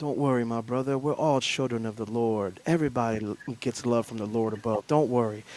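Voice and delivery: really soft, gentle, hushed, low voice. Retelling what Tony said to him out of pity; imitating Tony's really soft voice. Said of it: "talked to me with this really soft voice".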